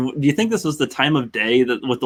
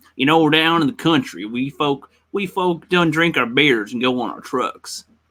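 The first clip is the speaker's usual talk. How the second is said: put-on country Texan accent; 2 semitones higher than usual. Asked to do a Texan accent, showing how country folk talk, Texan accent. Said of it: "I wanted to do a Texan accent".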